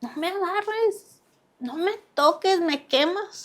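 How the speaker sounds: high-pitched shouted cry. Retelling what she yelled at her mother, retelling a shout. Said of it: "yo le empiezo a gritar".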